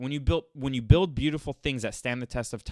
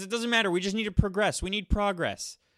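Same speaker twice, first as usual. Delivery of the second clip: high, mocking, hysterical caricature voice; 8 semitones higher than usual. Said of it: "He goes".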